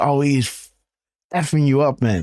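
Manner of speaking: speech broken up by laughter. Retelling what a laughing onlooker said: imitating someone laughing while talking. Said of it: "And he's laughing like".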